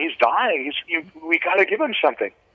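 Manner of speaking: put-on yelling that climbs as it goes. Retelling what people yelled about a dying man: imitating people yelling. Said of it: "people started yelling".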